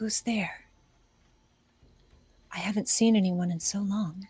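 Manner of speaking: faint, paper-thin, barely-there wisp of voice. Narrating a scene, voicing an unseen figure heard by Bo, in a paper-thin voice. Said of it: "this paper thin voice".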